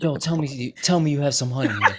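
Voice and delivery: put-on worried, concerned tone. Retelling a friend begging for honey: imitating a friend asking with concern. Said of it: "he had the concern in his voice".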